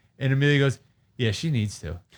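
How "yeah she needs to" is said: imitated little girl voice. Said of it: "in that tone, like, just like that".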